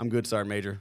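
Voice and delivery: normal talking voice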